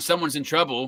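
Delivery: ordinary talk, nothing marked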